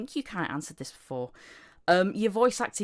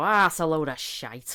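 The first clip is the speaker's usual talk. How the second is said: broad Yorkshire accent with heavy Yorkshire vowels; 5 dB louder than usual. Retelling what they say when they slip into it: Yorkshire accent. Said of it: "I just go Yorkshire and go".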